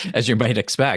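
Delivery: bone-dry, sarcastic, tossed-off aside. Echoing the other speaker's words: sarcastic. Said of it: "A little bit of sarcasm there".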